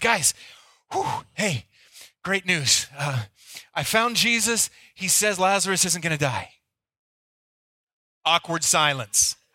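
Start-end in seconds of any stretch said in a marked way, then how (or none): 0.0-6.5 acted out-of-breath huffing and puffing. Acting out the messenger running back into town with news: acting out of breath. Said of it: "comes huffing and puffing into town and goes".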